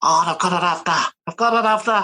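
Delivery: thick, high-pitched, mock Scouse accent.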